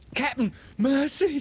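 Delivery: very high, quavering, trembling whimpering plea. Reading Starkey's plea to Captain Hook, Starkey whimpering, all a tremble. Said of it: "Starkey whimpered, all a tremble now".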